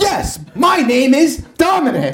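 very high, affected, drawn-out theatrical actor voice. Retelling an audition overheard through a door: imitating an overly theatrical actor. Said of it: "talking in a way that, like, nobody talks".

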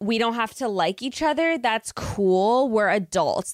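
put-on girl voice. Retelling a scene from the show: Jamie impression. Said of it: "that's my Jamie impression".

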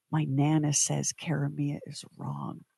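slow, hushed stage whisper. Retelling what a girl half-whispered in the speaker's ear: retelling a half-whisper. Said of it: "she whispers in my ear".

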